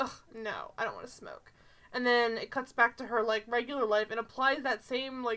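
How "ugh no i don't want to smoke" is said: mock whispered, offhand and dismissive delivery. Quoting a woman in a scene, imitating a dismissive, not-sad delivery. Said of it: "She doesn't say it in a legitimate way".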